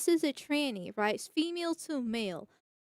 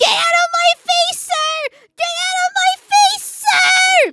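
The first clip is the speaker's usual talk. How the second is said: high, booming, shrill slow scream with "sir" drawn out; 17 dB louder than usual. Explaining the difference between shouting and speaking calmly, imitating someone screaming.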